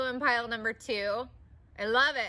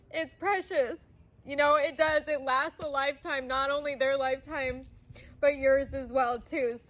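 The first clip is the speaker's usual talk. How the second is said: speaking tearfully, crying through the words; 3 semitones higher than usual. Speaking about two people who have died, crying. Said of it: "but I am crying".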